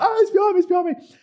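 put-on very high, shrill scream. Retelling hugging the wardrobe after seeing a spider, imitating own screaming. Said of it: "I'm screaming at the wardrobe".

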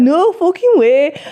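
put-on northern English accent. Explaining how their friend group jokes, demonstrating a northern accent. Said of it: "we do northern accents".

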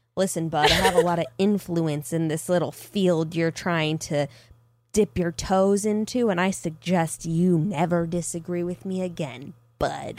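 super evil, sinister, intimidating, menacing tone. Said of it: "He just gets evil, super evil and intimidating".

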